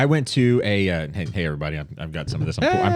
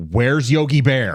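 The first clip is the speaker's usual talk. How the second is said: put-on acted, dismayed, upset, bewildered child voice; 4 semitones higher than usual. Retelling a childhood meeting at a ballgame, imitating own upset as a child. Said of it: "I got really, really upset".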